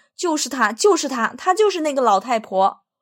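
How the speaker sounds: shouting out loud and high. Reading a little ghost shouting after the old woman who ran off, shouting. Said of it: "喊声".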